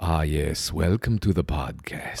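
very low, deep, slow, unhurried, hushed voice. Trying a podcast intro after being told to go deeper and slower. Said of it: "just go deeper on it okay just and like, slower".

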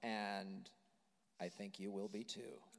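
low, soft, weird, creepy voice. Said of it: "I'm gonna keep talking in this weird, creepy voice".

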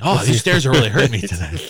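put-on complaining tone. Retelling how a guest complained about the stairs: imitating someone complaining. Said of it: "he was complaining".

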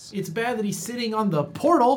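high blurt, a touch too loud. Reacting in character to a brother sitting on the portal: saying it a little too loud. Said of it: "As I say that a little too loud".

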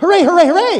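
annoying, shrill, very high, loud, repeated male cheering. Imitating a man cheering a hit in the first inning, high-pitched male voice. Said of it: "he had a kind of a higher male voice".

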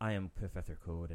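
very low, deep, bassy, dead-flat monotone drone. Mocking how an actor on The Flash talks, in a bassy monotone. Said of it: "it's so monotone, and like it's like a bassy monotone".

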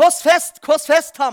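loud, high shout.

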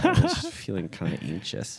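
animated, sing-song voice swooping up and down. Imitating Felipe after he mentions a chest cramp: impression of Felipe. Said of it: "That was my impression of Felipe".

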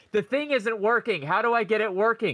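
mild, acted, half-shouted yell. Retelling a woman at an arcade game that didn't work, imitating her shouting. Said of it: "stood at the thing that didn't work and shouted".

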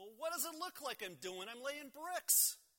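irritated tone.

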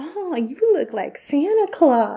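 put-on flirty voice. Speaker retelling a post office woman's remark, mimicking a sexy, inappropriate tone. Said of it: "in this all like inappropriate, sexy way".

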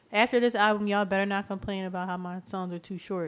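usual speaking voice

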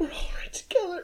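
whispered, breathy, crying through the words. Recounting what she says back after the whisper, crying while speaking. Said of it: "crying as she says it".

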